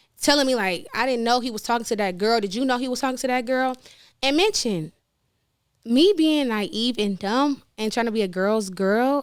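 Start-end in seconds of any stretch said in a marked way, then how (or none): none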